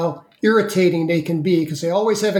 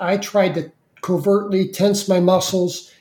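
ordinary talk, nothing marked

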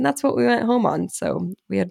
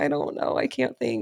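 put-on overwhelmed crying, quieter; 4 dB quieter than usual. Retelling a call with insurance, the speaker quotes her past self, retelling crying on the phone. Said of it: "I'm just like crying on the phone".

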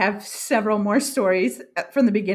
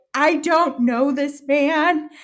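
put-on, high, drawn-out, panicked, frantic scream; 6 semitones higher, 4 dB louder than usual. Retelling freaking out on a hike, yelling at passersby, retelling a scream. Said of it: "I'm like screaming it".

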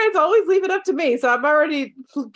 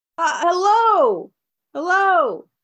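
mock echo, much higher pitch; 3 semitones higher than usual. In a role-play, a voice over an intercom answers a visitor with a fake echo repeating hello. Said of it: "why were you pretending to have an echo?".

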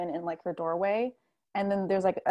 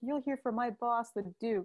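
put-on angry tone, higher pitch and quieter; 4 semitones higher, 5 dB quieter than usual. Acting out someone who warns you about their boss: imitating an angry person. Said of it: "all pissed".

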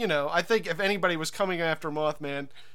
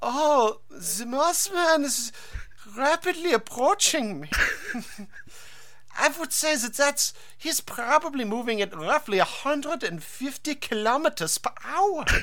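put-on German accent, much higher; 8 semitones higher than usual. Voicing Slenderman's imagined response, with a wistful German accent. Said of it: "had a wistful German accent".

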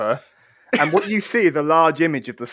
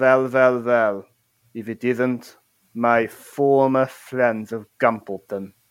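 low, menacing villain voice. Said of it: "that's Hans Uber".

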